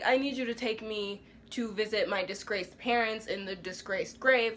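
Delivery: ordinary delivery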